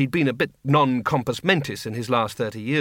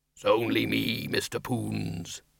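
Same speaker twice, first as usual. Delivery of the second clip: quieter, rumbling bogeyman voice; 3 semitones lower, 7 dB quieter than usual. Reading a story, the bogeyman behind the door answers Windle in a deep, rumbling voice. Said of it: "A deep, rumbling, but very diffident voice said".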